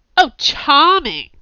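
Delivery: very loud, high yell. [name] answers Camilla's voice from down the stairwell, yelling up the stairwell. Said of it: "[name] yelled up".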